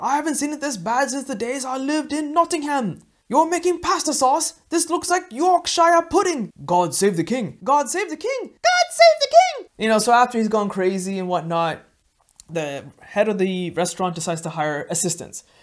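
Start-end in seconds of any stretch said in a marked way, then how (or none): 0.0-9.7 very high yell with big, swooping pitch swings. Retelling a kitchen inspection by Gordon Ramsay: imitating Gordon Ramsay yelling. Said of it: "He starts yelling".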